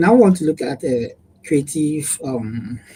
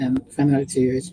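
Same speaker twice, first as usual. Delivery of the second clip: normal talking voice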